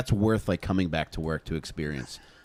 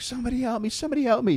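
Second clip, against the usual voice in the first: play-acted shrill, very high kid's screaming. Retelling how a kid stuck in a maze was screaming: imitating a kid screaming. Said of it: "he's screaming, like".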